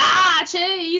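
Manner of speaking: very high, loud, shrieking creepy doll voice. Recalling someone jumping out of a closet on Halloween, doing a Chucky voice. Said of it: "I was saying it in my Chucky voice from Child's Play One".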